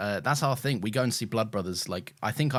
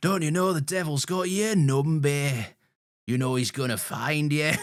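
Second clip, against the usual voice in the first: put-on loud Scouse accent with raised pitch; 6 semitones higher, 5 dB louder than usual. Quoting a line at his wife for a week after salt is spilled, in a Blood Brothers narrator Scouse accent. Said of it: "Is that a Scouse accent?".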